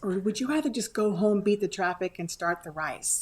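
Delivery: mock whisper. Retelling words said to a husband on the bleachers: imitating own whisper. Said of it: "So I whisper to him".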